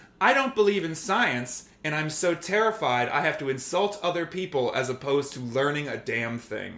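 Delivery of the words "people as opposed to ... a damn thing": normal talking voice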